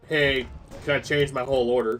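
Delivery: deadpan, flat, unapologetic monotone. Restaurant worker retelling an unapologetic customer's request, imitating a flat monotone. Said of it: "very just monotone".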